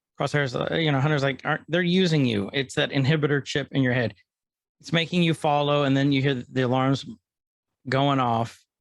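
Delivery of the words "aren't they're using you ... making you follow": usual speaking voice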